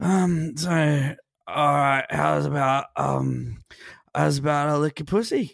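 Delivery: put-on sloppy, slow, drunken slurring. Retelling a drunken line said in bed, imitating drunken slurring. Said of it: "I'm slurring everything I'm saying".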